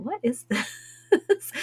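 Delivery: high, slow, baffled voice. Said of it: "I go".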